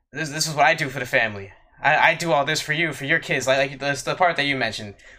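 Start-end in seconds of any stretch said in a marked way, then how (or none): none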